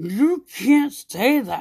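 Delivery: mock slow gritted-teeth yell under the breath. Retelling a younger woman telling her off like a mom: mock gritted-teeth under-breath yell. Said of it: "Gritting her teeth and like yelling at me, like under her breath".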